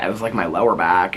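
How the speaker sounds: ordinary talk, nothing marked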